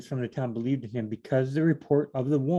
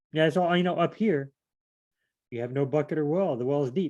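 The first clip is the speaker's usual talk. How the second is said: plain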